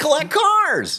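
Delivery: very high, pinched, nasal, cartoony voice. Asked whether these impressions still work, the speaker does a nasal cartoony Jay Leno impression. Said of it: "very cartoony and nasally".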